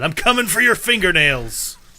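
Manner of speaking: high, loud, charging barbarian battle cry. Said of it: "most disturbing thing a barbarian could yell".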